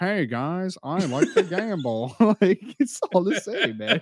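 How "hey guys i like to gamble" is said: put-on old person voice, higher and slower. Show that all your impersonations sound the same, now with the Mike Donzuzo impersonation. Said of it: "Mike Donzuzo".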